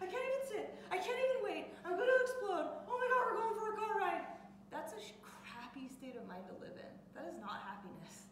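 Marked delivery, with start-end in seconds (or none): 0.0-4.2 overexcited dog voice, shrill, very high, loud, rushed. Describing a dog that goes ballistic for car rides, imitating the frantic dog. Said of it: "I mimicked the dog".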